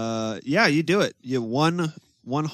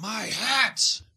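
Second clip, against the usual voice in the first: high-pitched character-voice yelling; 9 semitones higher than usual. Voicing a villain who sees his stolen hat: yelling in character. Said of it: "he yells".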